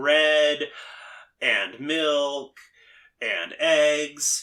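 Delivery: very slow, halting, pause before each and. Showing where intonation breaks fall in a list: pause before each and. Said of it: "the intonation breaks fall before the coordinator".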